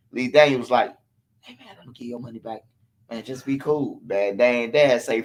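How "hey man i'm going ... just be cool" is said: very quiet, hushed, barely audible half-whisper. Retelling a money dispute, imitating Lee Daniels half-whispering. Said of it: "Lee Daniels trying to whisper to him".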